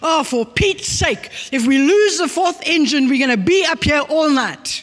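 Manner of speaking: sudden high-pitched outburst. Retelling a story about a passenger on a plane: imitating a passenger shouting. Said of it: "a passenger jumps up and he shouts".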